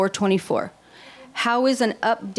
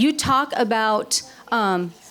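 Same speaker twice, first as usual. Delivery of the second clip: ordinary talk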